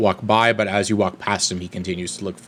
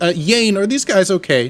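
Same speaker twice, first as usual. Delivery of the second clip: very high, calling shout; 11 semitones higher, 4 dB louder than usual. Voicing a woman calling up from the caravan: shouting up to someone. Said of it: "she shouts up as you guys are talking and says".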